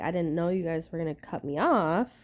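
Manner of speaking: plain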